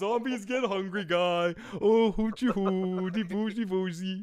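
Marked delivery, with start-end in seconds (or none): 1.8-4.2 goofy put-on Swedish accent with gibberish. Imagining Jerry being eaten by a zombie, in a Swedish Chef voice. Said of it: "He's gonna sound like the Swedish chef".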